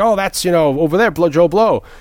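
bad put-on Italian accent. Retelling Sean Connery, before fame, carrying a couple's luggage at an airport, terrible Italian accent. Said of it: "puts on like a terrible Italian accent".

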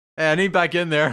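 random, sudden, high, loud screaming outburst. During a role-playing game, calling through the open door, screaming. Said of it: "You just like start screaming randomly".

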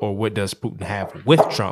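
the word with hit with strong stress. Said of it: "what does Putin have on Trump".

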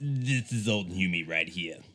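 fake smoker-like voice. Asked to let everyone hear the character's voice, speak as Old Humi. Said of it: "How about we hear a little bit of that voice?".

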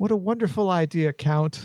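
dripping, mock-sweet sarcasm in a slow drawl. Voicing a character who answers the Count's idea: sarcastic. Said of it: "she says to you sarcastically".

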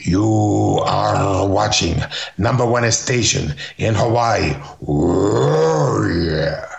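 put-on strange Argentine-Armenian accent. Retelling a wrestler's station ID in a bad imitation of his strange accent. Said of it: "that's a bad imitation".

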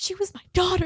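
very high, big, emotional, dramatic monologue delivery. Acting out an emotional film monologue just asked for: Sally Field emotional monologue. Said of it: "like a Sally Field monologue".

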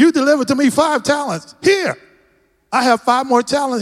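mock eager, thrilled, excited servant voice. Retelling a story about a man with five more talents, imitating an excited man. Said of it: "He was excited".

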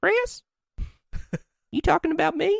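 high, sweet, lovely Southern lady voice. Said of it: "in her lovely, sweet Southern voice".

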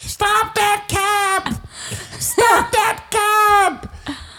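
put-on very high, very slow, drawn-out old lady shout. Retelling an old lady with a walker trying to stop a cab: imitating an old lady calling for a cab. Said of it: "Show me how who she was with the walker".

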